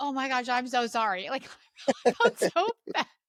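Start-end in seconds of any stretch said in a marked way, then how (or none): 0.0-1.3 mock-panicked, frantic voice, much slower. Retelling cursing in front of a religious friend, reenacting a panicked apology. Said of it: "I was like panicked".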